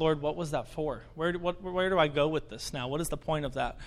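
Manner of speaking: ordinary delivery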